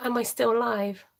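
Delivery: ordinary talk, nothing marked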